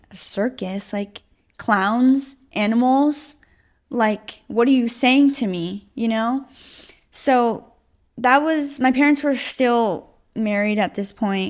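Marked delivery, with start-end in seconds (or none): none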